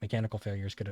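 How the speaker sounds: ordinary delivery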